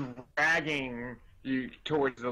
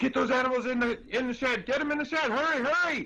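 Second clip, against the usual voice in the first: very high, urgent hollering; 12 semitones higher than usual. Game master voicing a man who turns and sees the party approaching: hollering urgently. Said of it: "he starts hollering".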